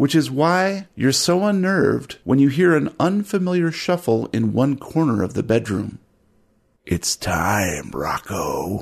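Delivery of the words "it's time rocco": very low, deep, soft gurgling, burbling voice. Narrator voicing an unseen caller calling out to rocco: deep, burbling voice. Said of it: "a deep, burbling voice calls out".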